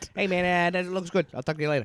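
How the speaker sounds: put-on high, weird Brooklyn accent. Imitating a producer with a weird Brooklyn accent: Brooklyn accent as J J Abrams. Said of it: "a weird Ben Shapiro Brooklyn accent".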